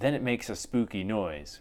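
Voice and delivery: plain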